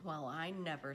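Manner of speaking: ordinary delivery, nothing marked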